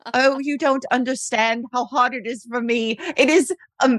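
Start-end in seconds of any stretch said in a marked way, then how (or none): 0.1-2.9 put-on, badly done British accent. Retelling an accused man's interview outrage: imitating Nicholas Rossi's British accent. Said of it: "his British accent is even worse than that".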